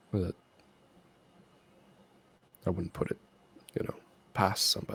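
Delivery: voice dropped low, near a whisper. Voicing a character who shares a suspicion of heretic magic: lowered voice. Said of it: "he just lowers his voice a little bit".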